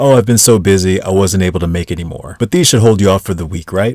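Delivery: ordinary talk, nothing marked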